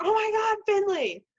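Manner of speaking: very high, doting, affectionate yell, acted out. Asked for an example, the speaker retells talking to him, with affectionate mock-yelling. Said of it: "I'm just yelling at him because he's so cute".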